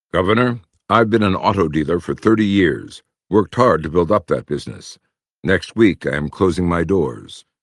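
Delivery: ordinary talk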